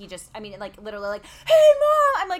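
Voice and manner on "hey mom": put-on shrill, very high, very loud child's scream. Mother imitating how her son comes out greeting her: imitating a child screaming. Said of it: "He just comes out screaming".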